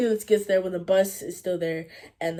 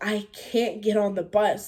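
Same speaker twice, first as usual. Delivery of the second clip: mock tearful voice, slower; 2 semitones higher than usual. Speaker retells her reply to a friend urging her onto the bus, acting out crying. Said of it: "like wiping away tears".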